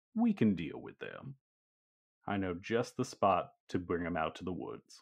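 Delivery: low, smug, self-satisfied, knowing tone. Narrating the scene, the speaker voices Sam Hazard being overheard, smug Sam Hazard voice. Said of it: "you can definitely hear Sam Hazard smugly say".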